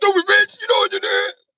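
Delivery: full-blast, shrill, furious screaming, pitched way up. Acting out a man on the phone with a woman in the tub: acting out a man yelling. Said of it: "Why you yelling?".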